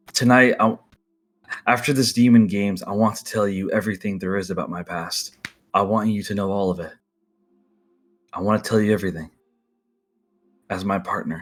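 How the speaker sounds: hushed voice. Voicing a character holding someone tightly and speaking into their ear: whispering. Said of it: "he whispers in your ear".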